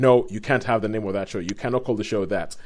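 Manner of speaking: normal talking voice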